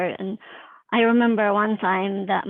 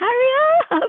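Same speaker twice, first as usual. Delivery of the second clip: shrill, very high, loud scream; 6 dB louder than usual. Retelling a nine one one call as someone approached: retelling own scream. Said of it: "I'm, like, screaming".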